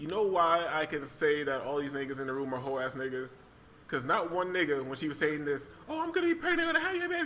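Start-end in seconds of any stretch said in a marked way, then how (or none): 5.9-7.3 very high-pitched, hollering, acted-out yell. Retelling what she said in the room: imitating someone yelling. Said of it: "when she yelling all this shit".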